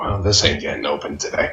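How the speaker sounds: soft, muttered mumble under the breath. Voicing a character pulling out a whiskey bottle: mumbling under breath. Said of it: "I just kinda mumble under my breath".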